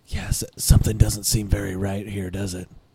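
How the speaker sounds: whispering in a put-on voice. Whispering to a companion in a town that seems empty: whispering in character. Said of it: "I whisper to him".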